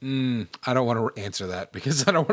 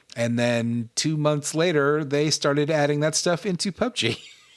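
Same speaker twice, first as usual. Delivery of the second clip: ordinary delivery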